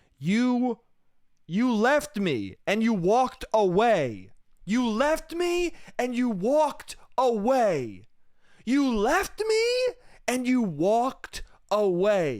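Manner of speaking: acted-out, repeated, high, impassioned, drawn-out screaming. Recounting a woman in the street shouting after someone, acting out her screaming. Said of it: "she was screaming".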